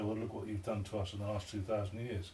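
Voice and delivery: ordinary talk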